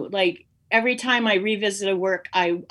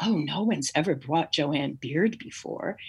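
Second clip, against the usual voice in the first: soft, low, breathy, refined, elegant voice; 5 semitones lower, 5 dB quieter than usual. Speaker quotes a woman who spoke to them, in a breathy, elegant voice. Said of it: "like this really breathy, elegant voice".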